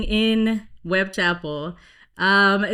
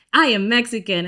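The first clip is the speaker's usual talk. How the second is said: put-on proud voice; 4 dB louder than usual. Retelling own answer to bar customers asking ethnicity: retelling a proud declaration. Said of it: "I was already so proud".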